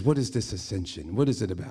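put-on casual Australian accent, rising question tune. Retelling a father's question about the holiday: Australian accent. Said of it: "in his Australian accent".

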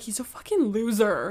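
put-on thick Irish accent. Retelling a podcaster calling a killer a loser: imitating thick irish accent. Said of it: "with, like, the thick Irish accent".

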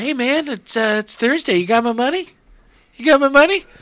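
very loud, high, belted-out cartoon voice. Retelling a cartoon scene, imitating Stewie. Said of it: "Stewie comes in, Brian gets out of the bath. He's like".

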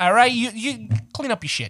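put-on angry New York accent. Acting out the rant over the mess, in a mock-angry new york accent. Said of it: "I'll go into that and I'll just pretend to be angry".

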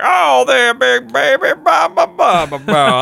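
very high, slow, drawn-out, creaky rasping voice. Describing a favorite movie villain to the other speaker, imitating Lotso. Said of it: "And he's just like".

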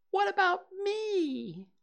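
tiny, very high squeak, me drawn out. Narrator reads the story, Piglet looks up and asks, in Piglet's squeaky voice. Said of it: "said in his squeaky voice".

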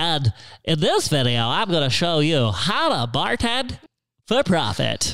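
put-on high voice of a boy in puberty. Recalling his early bartending video, he imitates his younger self's puberty voice. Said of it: "So that's my puberty voice".

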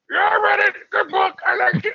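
oddly very high-pitched voice. As [name], answering from London whether you read the book, speak in a Muppet voice. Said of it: "You sound like a Muppet".

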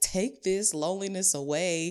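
imploring, begging plea, acted out. Retelling a past prayer to god for friends: imitating own pleading. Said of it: "begging and pleading".

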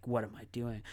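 acted serious under-breath delivery. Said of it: "under their breath kind of thing".

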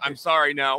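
ordinary delivery

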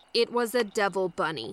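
plain

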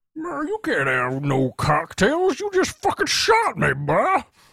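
very high, blustering Texas drawl. Acting out a hunting-accident skit as the shot man, Foghorn Leghorn-type Texan voice. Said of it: "foghorn leghorn type Texas attorney".

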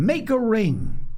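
very high, commanding shout. A player in the jabbing game calls out to the others, shouting. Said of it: "Jack shouted".

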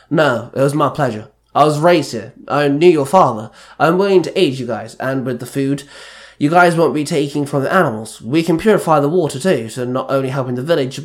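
plain reading voice

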